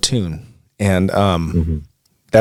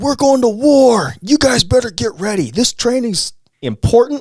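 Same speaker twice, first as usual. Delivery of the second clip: put-on angry, furious screaming yell, pitched higher. Retelling a drill instructor bursting in with news: imitating an angry screaming instructor. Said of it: "But this guy's mad".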